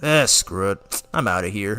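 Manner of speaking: offhand, resigned, tossed-off delivery. Retelling a scene from the BoJack movie: imitating Piccolo. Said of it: "Piccolo's all like".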